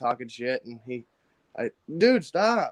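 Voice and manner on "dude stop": put-on shrill, very high, half-awake yell. Retelling waking up during a tattoo and telling the tattooist to stop, acting out own yell. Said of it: "And I'm like yelling".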